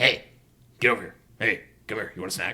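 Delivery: low, quick, hushed, rattled-off delivery. Describing a movie scene to a listener, doing a Beetlejuice voice. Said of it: "You sound just like him".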